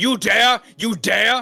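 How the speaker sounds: very high, furious, drawn-out fuming shout. Voicing an Archmage whose spell was counterspelled: fuming mad shouting. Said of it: "points a crooked finger at you and says".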